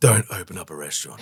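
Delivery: deliberately deep, heavy-bottomed put-on voice. Answering what they would change looking back ten years, really deep voice. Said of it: "I say that with a really deep voice".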